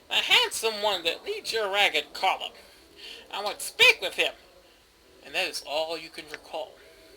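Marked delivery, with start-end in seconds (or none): 0.1-4.3 put-on rasping, grating, swooping old crone's hag voice. A storyteller voices a hag addressing the party, in a grating hag voice. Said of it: "The hag's grating voice carries to your ears".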